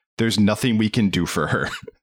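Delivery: put-on deadpan delivery. Speaker quotes a movie character reacting to a death: imitating a deadpan delivery. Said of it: "the other guy deadpanned".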